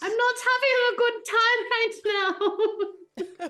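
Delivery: screamed, pitched very high. Recounting running away, the speaker retells what Pen screamed, retelling a scream. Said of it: "Pen was screaming".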